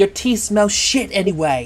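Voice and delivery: loud, high hollered yelling. In a game, a player's character yells back at an old lady. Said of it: "I yell back".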